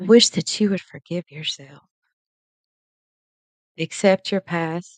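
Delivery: fighting back tears. Telling the listener what they wish for them, trying not to cry. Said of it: "I'm trying not to cry".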